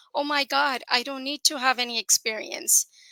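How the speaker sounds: plain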